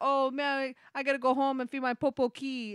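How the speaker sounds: put-on pidgin speech. Retelling how a man talks on his show, in a fake pidgin accent. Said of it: "He's like".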